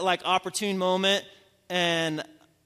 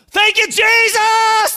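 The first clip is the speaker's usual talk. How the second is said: very high, loud, full-throated shouted cry; 13 dB louder than usual. Retelling praying over a woman, the speaker reenacts their own prayer: retelling own shouted prayer. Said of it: "praying at the top of my lungs".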